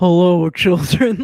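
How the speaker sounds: very deep, loud, booming monster voice. Asked for an impression, the speaker does the Nether Gorgon voice. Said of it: "impression of the Nether Gorgon's voice".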